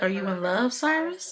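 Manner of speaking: normal talking voice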